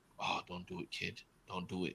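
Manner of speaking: low, hushed whisper. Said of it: "is whispering to himself".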